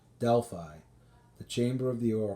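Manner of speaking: ordinary delivery, nothing marked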